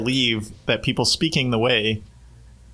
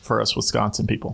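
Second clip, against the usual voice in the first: normal talking voice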